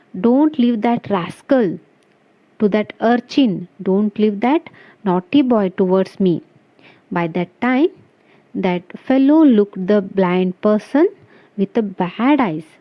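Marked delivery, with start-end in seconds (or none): none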